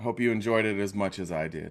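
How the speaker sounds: soft put-on radio announcer delivery. Host welcoming everyone back after the weekend: radio voice. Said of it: "It's my it's my radio voice".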